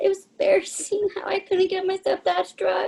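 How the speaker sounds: tearful crying speech. Talking about their weight, the speaker speaks while crying. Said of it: "Sorry, I'm just crying".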